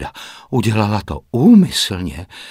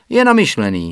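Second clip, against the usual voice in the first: protesting, objecting, pushing-back tone; 3 semitones higher than usual. Narrating fiction, a character answers the narrator's defence of another man: retorting. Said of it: "ohradila se Joanna".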